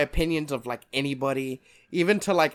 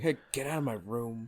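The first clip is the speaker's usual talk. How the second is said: put-on detached, couldn't-care-less, aloof tone; 2 semitones lower, 9 dB quieter than usual. Acting out brushing off a dad's question: imitating an aloof, uncaring voice. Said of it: "very aloof, very, like, doesn't even care".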